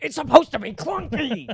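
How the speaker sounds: put-on yelling. Acting out a guy yelling at his girlfriend: acting out a guy yelling. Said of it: "a guy yelling at his girlfriend".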